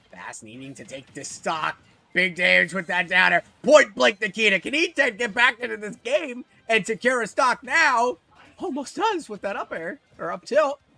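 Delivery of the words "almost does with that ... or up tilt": high squeaky cartoon voice. Commentating a tense match, voice turning into a Mickey Mouse voice. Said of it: "I turned into Mickey Mouse there".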